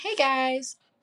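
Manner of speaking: bright customer service tone. Recalling how the video was started: little customer service voice. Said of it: "in my little, like, customer service voice, you know?".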